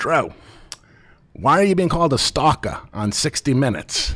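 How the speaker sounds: put-on thick New Jersey accent. Quoting the speaker's mom asking about a TV story, in a hardcore New Jersey accent. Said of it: "very New Jersey hardcore accent".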